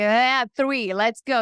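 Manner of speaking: ordinary delivery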